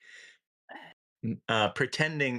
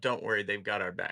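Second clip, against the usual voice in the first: usual speaking voice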